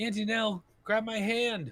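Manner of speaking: put-on high, young girl voice. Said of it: "She says".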